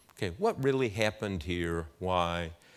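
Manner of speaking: normal talking voice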